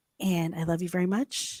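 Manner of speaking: gentle half-whispered voice. Saying goodbye to another speaker at the end: half-whispering. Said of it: "I'm gonna whisper us out".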